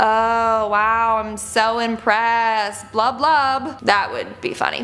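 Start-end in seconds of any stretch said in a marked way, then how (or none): 0.0-3.8 mock-sarcastic put-on fish voice. Describing the sarcastic fringe head fish, imagining what it would say, sarcastic fish voice. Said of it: "picturing a fish with like bad bangs that goes like".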